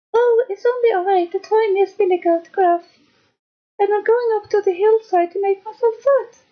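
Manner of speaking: squeaked out, very high and tiny. Reading the tale, the youngest goat answers the roaring Troll, tiny Billy Goat Gruff voice. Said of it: "with such a small voice".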